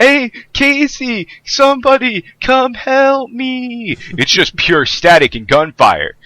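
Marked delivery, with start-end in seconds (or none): 0.0-4.0 play-acted high, whiny drawn-out yell. Telling the group about a distress call, mimicking Maverick's usual whiny yell. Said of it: "Maverick's whiny ass voice yelling".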